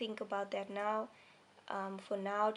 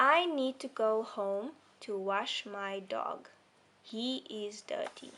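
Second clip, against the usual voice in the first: slow, measured reading, pausing at the comma; 4 dB louder than usual. Speaker demonstrates reading a sentence aloud, pausing at the comma. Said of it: "here's an example for like a pause".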